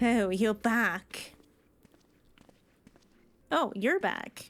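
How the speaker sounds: mock unthrilled, unenthusiastic tone. Mimicking a game character's greeting, imitating unthrilled Estinian. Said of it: "he sounds so not thrilled to see us".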